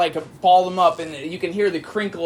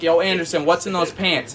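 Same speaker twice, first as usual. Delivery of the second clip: usual speaking voice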